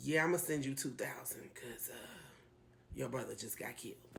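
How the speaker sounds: soft, hushed, grim-sounding whisper.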